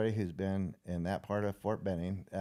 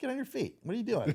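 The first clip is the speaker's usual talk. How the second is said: play-acted, very high, barked yelling; 14 semitones higher than usual. Retelling how the one signing him in yelled at him: imitating someone yelling. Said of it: "he starts yelling at me".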